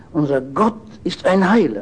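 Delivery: stress on Gott, lifted and held firm.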